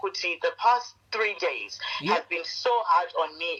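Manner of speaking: plain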